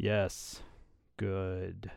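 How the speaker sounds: put-on dubious, deadpan read. Reading a slogan the way Christina would say it: Christina's mock-dubious deadpan. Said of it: "in this kind of dubious, almost like Daria kind of a read".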